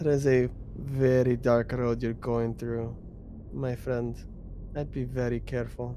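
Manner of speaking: hushed, dark, foreboding, ominous tone. Game master as Eliana, stepping close to warn a player's character: ominous.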